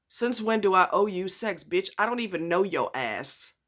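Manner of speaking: plain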